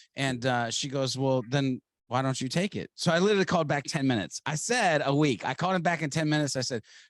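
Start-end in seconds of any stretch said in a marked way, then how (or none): none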